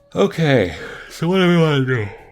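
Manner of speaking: words caught in a yawn. Tired speaker deciding what to do next, yawning while talking. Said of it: "sorry for yawning".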